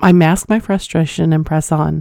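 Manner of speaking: ordinary delivery, nothing marked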